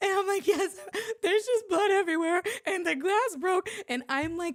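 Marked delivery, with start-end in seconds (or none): 0.5-3.7 bawling, sobbing, blurted out through tears. Retelling a phone call about a cut, imitating own crying. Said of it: "bawling like a baby".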